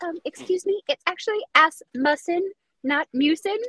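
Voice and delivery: very high, small, meek and timid voice. Act out him raising his hand fifteen years later to correct a name, imitating someone meek. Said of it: "he just like meekly raises his hand".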